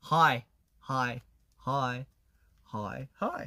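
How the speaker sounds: slow Australian "hi", slight "uh" before i, repeated. Showing how "hi" sounds in Australia: Australian accent on "hi". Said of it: "호주에서는 보통은 하이, 약간 어가".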